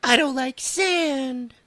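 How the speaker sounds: very high whine with "sand" drawn out. Retelling a game where Anakin's attacks missed: whiny Anakin voice. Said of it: "Anakin went".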